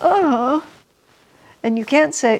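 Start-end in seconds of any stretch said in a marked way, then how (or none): 0.0-0.7 sad, high-pitched oh said on the out-breath. Explaining happy and unhappy breaths, demonstrating an unhappy 'oh' on an exhale. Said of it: "The unhappy exhalation is".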